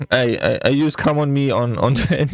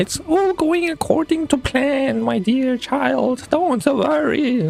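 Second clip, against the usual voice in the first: very high, put-on old-woman granny voice; 12 semitones higher than usual. Speaking to someone while relaxing her, in a put-on grandma voice. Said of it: "I'm using the grandma voice on you".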